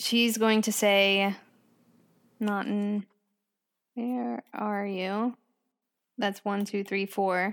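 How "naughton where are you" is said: whispering, much quieter. Planning a scene with friends, the speaker shows the line she'll say, whispered. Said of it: "turn to the corner and like whisper it".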